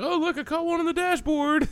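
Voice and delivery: thrilled, high-pitched.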